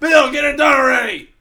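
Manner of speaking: mock angry shout, very loud and high. Mimicking the co-host who keeps sending threats, mock-angry Jack voice. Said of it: "Angry Jack voice".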